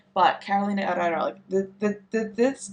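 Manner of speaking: stuttering, stammering, tripping over words. Choosing between two looks, the speaker gets confused and starts stuttering. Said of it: "sorry, I'm like stuttering".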